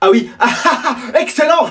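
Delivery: forced, put-on fake laughter. A student, urged by a classmate to laugh for the teacher: forced laugh on command.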